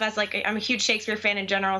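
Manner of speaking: rushed, rattled-off, way too fast pace.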